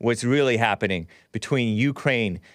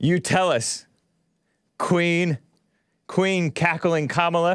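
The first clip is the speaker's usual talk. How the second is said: mocking, needling sarcasm, slow and pitched up; 6 semitones higher than usual. Reacting to a played clip of a politician's explanation: sarcastic. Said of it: "I'm being a little sarcastic".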